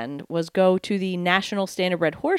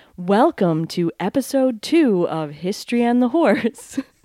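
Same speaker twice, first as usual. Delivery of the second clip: put-on on-air radio announcer voice; 4 semitones higher, 4 dB louder than usual. Welcoming listeners to episode two, in a radio voice. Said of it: "I'm going to use the radio voice that you hate".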